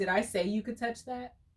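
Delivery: put-on, dead serious, stern-faced tone. Retelling a date's question about touching something in his car: imitating a dead serious question. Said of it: "looked at me straight face and was like, he was dead serious".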